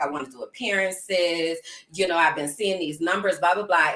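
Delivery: ordinary talk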